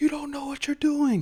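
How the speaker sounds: high, soft, desperate pleading voice. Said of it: "And he's like".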